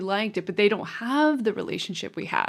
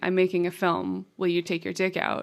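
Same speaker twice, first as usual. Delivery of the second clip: ordinary talk, nothing marked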